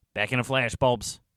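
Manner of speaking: usual speaking voice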